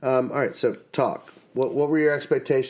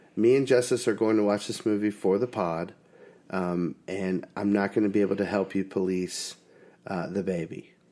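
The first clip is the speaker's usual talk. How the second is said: ordinary delivery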